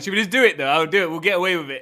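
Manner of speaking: pumped-up, rallying tone. Mimicking a worker's hesitation as if rallying bank robbers: imitating a bank robber pep talk. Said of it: "giving a pep talk to Robber Banks".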